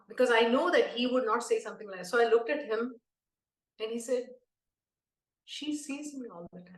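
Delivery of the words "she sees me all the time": very soft, hushed, wispy little voice. Retelling what Swami said to him, imitating Swami's soft wispy voice. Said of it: "Swami's voice is very soft and wispy".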